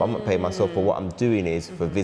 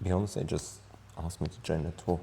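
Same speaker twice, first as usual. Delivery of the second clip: put-on quivering sad voice, very quiet, barely audible; 10 dB quieter than usual. Performing the same line in an emotions game, sad: put-on sad trembling voice. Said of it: "Not the voice tremble".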